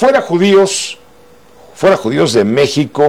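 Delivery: normal talking voice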